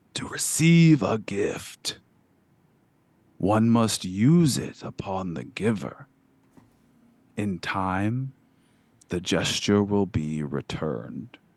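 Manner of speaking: rasping monster-like voice. Retelling what a kelp-bearded figure said to you, in a raspy voice. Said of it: "in a raspy voice".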